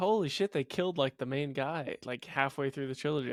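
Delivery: plain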